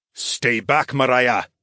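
firm, authoritative, commanding tone. One of the Iudices orders Mariah to stay back: commanding. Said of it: "one of the other Iudices commanded".

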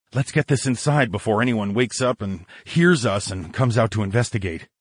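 ordinary delivery

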